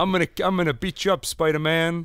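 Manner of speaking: put-on New York accent. Trying out how Kingpin would talk to Spider-Man, in a New York accent. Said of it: "Don't you think Kingpin probably has a New York accent?".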